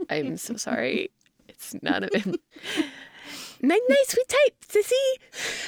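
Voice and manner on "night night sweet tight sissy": put-on high, tiny baby voice. Parent voicing their baby son for his sister, in Franklin voice. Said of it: "I pretend to be my son, 10-month-old son".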